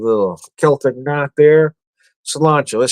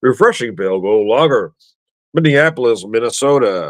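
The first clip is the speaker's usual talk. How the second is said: put-on radio ad announcer voice; 2 semitones lower than usual. Tasting a lager and reading out its description, in announcer voice. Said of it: "Sometimes I go into announcer voice".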